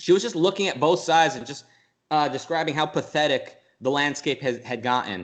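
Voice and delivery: ordinary talk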